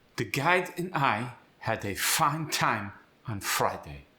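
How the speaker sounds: German-accented English, stress on first syllables. Demonstrating a sample sentence for listeners, German accent. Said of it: "Most of his stress was on the first syllable".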